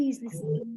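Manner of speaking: timid, underconfident, breathy, almost whispered voice. Showing how a passive speaker asks to be listened to: timid, underconfident. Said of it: "if I am underconfident, if I am passive".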